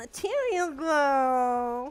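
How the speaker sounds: loud put-on Milanese rich-girl accent, "girl" drawn out. Redoing a phrase in that accent: imitating Milan rich daddy's girl accent. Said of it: "let me correct that".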